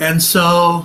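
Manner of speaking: plain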